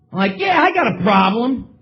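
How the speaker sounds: ordinary talk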